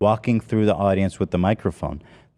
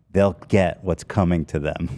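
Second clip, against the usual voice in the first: mock very serious voice, lower; 2 semitones lower than usual. Speaker retells what a man said to them, looking straight at them: retelling a very serious voice. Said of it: "in a very serious voice".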